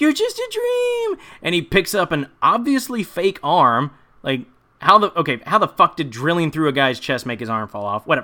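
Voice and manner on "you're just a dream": mock screaming, very high. Recounting a scene where a woman screams at a man: retelling a scream. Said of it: "she starts screaming at him".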